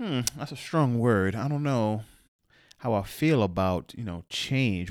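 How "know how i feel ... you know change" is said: normal talking voice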